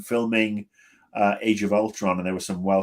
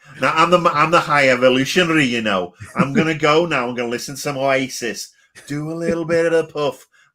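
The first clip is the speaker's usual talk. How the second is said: put-on big, loud, high Manchester accent; 6 semitones higher, 6 dB louder than usual. Picturing the High Evolutionary from Manchester, in a Jamie Tartt-style accent. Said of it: "picture like a Jamie Tart kind of accent".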